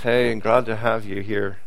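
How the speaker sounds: through clenched teeth. Speaker shows how someone would greet sinners, through gritted teeth. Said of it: "greeting them through his teeth".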